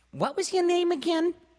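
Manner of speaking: very high, loud, complaining whiny voice. Reading a story aloud, Trudy asks the Toad Man a question; whiny voice. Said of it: "asked in a whiny voice".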